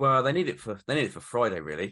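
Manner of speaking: ordinary talk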